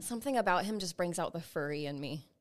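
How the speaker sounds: usual speaking voice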